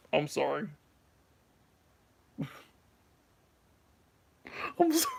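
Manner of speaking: words breaking into laughs, talking through laughter. Admitting to skipping a season, laughing while talking. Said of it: "That's why I'm laughing right now".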